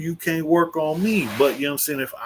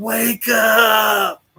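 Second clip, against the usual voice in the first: loud yell with the last word stretched; 6 semitones higher, 5 dB louder than usual. Retelling what people out here are yelling: imitating people yelling. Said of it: "people out here yelling".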